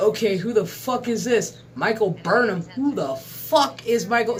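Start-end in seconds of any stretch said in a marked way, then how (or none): none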